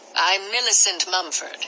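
ordinary delivery

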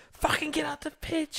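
very high screaming yell. Describing dads at Sunday League yelling at their kids: imitating a dad screaming. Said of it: "you see the dads screaming at their kids on the pitch".

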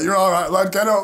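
loud, tough, stern dad voice. Retelling how the other speaker reacted to a fall: imitating a dad toughening up his son. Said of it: "you came over like a dad, like, who's trying to toughen his son up".

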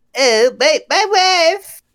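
failed cartoon voice, very high, squeezed, loud, slow. Imagining Dexter from Dexter's Lab saying the line: attempted Dexter voice. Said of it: "imagine Dexter going like".

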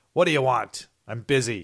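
loud, cranky, cantankerous voice. Retelling a film scene where a tortured character answers his captor: cantankerous Dumont impression. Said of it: "responds in a cantankerous fashion".

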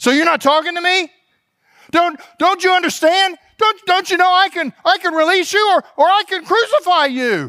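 put-on panic. Speaker acts out Pilate speaking to Jesus, imitating Pilate's panicky voice. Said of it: "there's a little bit of panic in his voice".

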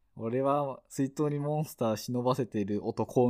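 ordinary talk

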